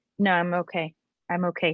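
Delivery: normal talking voice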